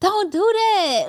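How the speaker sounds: very high-pitched, urgent yelling. Describing watching a show, retelling yelling at the TV. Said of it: "when you yelling at the T V".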